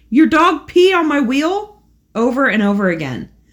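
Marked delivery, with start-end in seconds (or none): 0.1-1.8 acted-out, high, loud hollering shout. Reading a story aloud where a man with a gun shouts: shouting. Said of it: "He aimed it at us and shouted".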